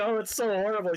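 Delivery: very high, loud, tearful sobbing wail, put on. Retelling a movie scene where a mother sits crying: imitating someone crying. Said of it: "she's just sitting there crying".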